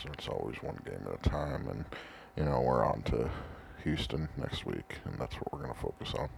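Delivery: creaky, rough voice, ground out. Showing how a football coach always talks: Bill Belichick impression. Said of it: "he always just talks like this".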